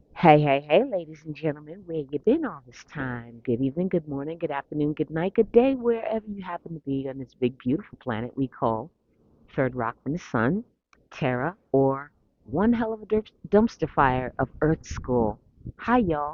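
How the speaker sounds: ordinary delivery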